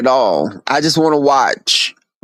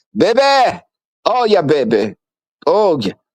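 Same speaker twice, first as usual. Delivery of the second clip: preacher cadence slipping into sassy, campy slang; 3 semitones higher than usual. Mocking how the preacher's lingo changes: imitating preacher sounding like Puerto Rican queen. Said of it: "he starts sounding like a Puerto Rican queen".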